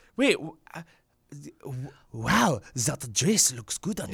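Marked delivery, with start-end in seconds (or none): 1.6-4.2 put-on French accent on spoken English. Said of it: "in a French accent".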